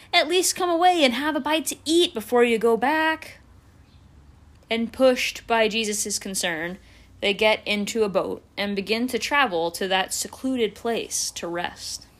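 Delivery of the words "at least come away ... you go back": pitched-up, urging, typical motherly voice. Imagining Jesus speaking to his followers, in a typical mom voice. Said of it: "speaking like a typical mom".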